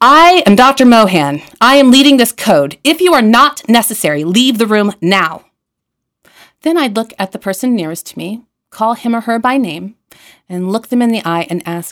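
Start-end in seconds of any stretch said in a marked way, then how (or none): 0.0-5.4 very loud, booming, commanding, proclaiming delivery. A doctor leading a code announces himself to the room, booming voice. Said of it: "announce in a booming voice".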